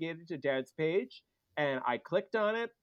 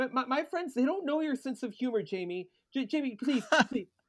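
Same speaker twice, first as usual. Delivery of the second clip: put-on panicked, pleading voice, higher; 8 semitones higher than usual. Retelling a phone call from a panicked mother: imitating a panicked mother. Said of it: "a panicked call from my mother going".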